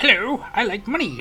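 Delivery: very loud, high, badly done cartoon crab voice. Player calling himself Mister Krabs over money, in a bad Mister Krabs impression. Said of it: "It was a very bad impression".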